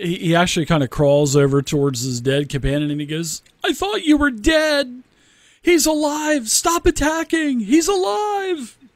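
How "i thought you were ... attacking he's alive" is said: very high, stretched-out, drawn-out yelling. Retelling how a character crawls to his dead companion, retelling a yell. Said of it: "He yells".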